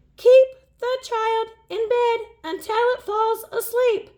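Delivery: very high squeaky monster voice. Reading a story, the orange monster Morgan answers a question in a squeaky voice. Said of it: "The orange monster bounced and squeaked".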